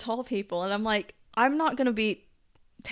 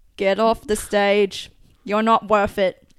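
fake British accent, louder; 9 dB louder than usual. Acting out imagined fans telling someone off: put-on british accent. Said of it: "Why am I going British now?".

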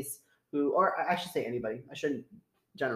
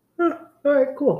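loud, very high speech through a yawn; 10 semitones higher, 8 dB louder than usual. Tired after reviewing a wine, responding while yawning. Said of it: "Sorry, I'm yawning".

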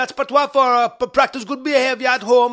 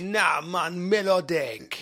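fake Jamaican accent, lower and quieter; 7 semitones lower, 8 dB quieter than usual. Joking in a mock voice while another speaker objects: put-on Jamaican accent. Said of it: "that's how we say it in Jamaica".

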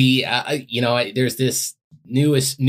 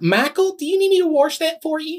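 put-on very high-pitched East Texas accent. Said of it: "So she's like".

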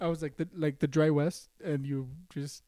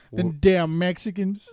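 loud, hammed-up, put-on country accent; 2 semitones higher, 7 dB louder than usual. Asked by another speaker to do one, attempting a country accent. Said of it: "Do a country accent".

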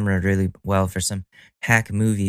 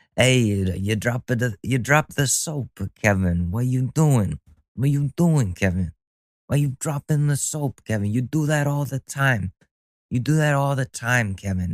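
bad fake Italian New York accent, higher; 4 semitones higher than usual. Comedy bit set in prison showers, taunting an inmate; bad Italian New York accent. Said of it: "That's my shitty Italian accent".

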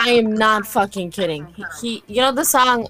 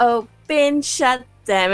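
put-on jazzy delivery. Retelling what a stranger at work said: imitating a jazzy delivery. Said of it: "very, like, jazzy".

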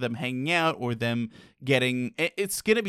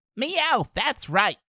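very high-pitched cartoon cat voice; 10 semitones higher than usual. Asked by a friend to do Meowth, speaker tries it, Meowth voice. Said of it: "You do it".

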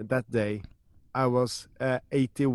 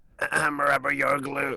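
cartoonish mother voice; 2 semitones higher than usual. On a show, a speaker repeats a Simpsons catchphrase: Marge impression. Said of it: "grade A Marge impression".

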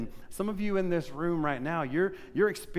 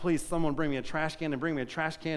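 ordinary delivery

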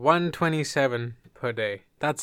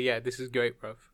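ordinary talk, nothing marked

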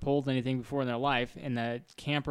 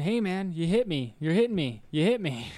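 play-acted hollering and screaming, yelling in protest; 4 semitones higher, 4 dB louder than usual. Retelling how a man crushed by a camper shouted at the driver, imitating someone screaming. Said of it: "the guy's just screaming and yelling".

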